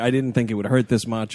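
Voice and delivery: ordinary talk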